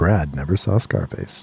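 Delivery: low, deep, dramatic voice-over narrator voice. Speaker asks to do a narrator voice while chatting about scarface, narrator voice. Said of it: "Can I do narrator voice real quick?".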